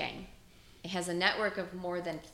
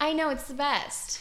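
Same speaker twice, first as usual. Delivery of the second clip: sarcastic, laid-on, pitched-up enthusiastic gush; 8 semitones higher, 3 dB louder than usual. Speaker talking about a couple whose engagement was followed by COVID, sarcastic. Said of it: "that's all fucking sarcasm".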